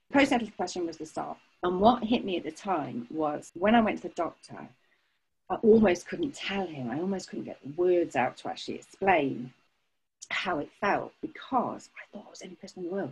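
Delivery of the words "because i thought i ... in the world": quick quiet whisper. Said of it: "I'm whispering it to you now".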